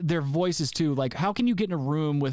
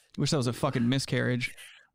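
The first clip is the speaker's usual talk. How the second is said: ordinary talk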